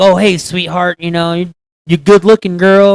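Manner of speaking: put-on loud, fawning, flattering creepy old man voice. Describing the flattering kind of creepy old man, imitating a flattering creepy old man. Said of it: "how the flattering creepy be like".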